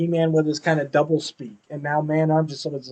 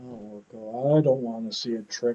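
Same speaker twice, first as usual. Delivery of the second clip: mock heroic voice, deeply downcast, all fight gone; 5 semitones lower, 9 dB quieter than usual. Retelling a cartoon scene: imitating depressed He-Man voice. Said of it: "You never hear He-Man that depressed sounding".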